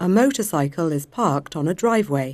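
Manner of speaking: British English pronunciation, UK English accent. In an English lesson, the model sentence is heard with British English pronunciation. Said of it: "그럼 영국 발음을 들어볼게요".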